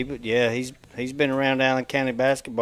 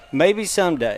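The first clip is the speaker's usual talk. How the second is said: ordinary talk, nothing marked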